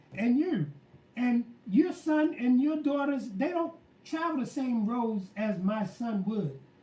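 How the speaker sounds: ordinary delivery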